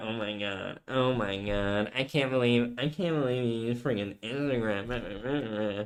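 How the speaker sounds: very soft, hushed, drawn-out put-on girlfriend voice. Asked what voice he just did, mimicking his girlfriend's voice. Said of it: "You're mimicking your girlfriend voice".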